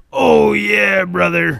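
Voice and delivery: rough loud growl. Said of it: "he would talk like Hogan".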